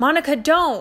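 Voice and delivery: loud, high-pitched shout. Narrator reads a man yelling at a woman to stop her: yelling. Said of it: "he yelled".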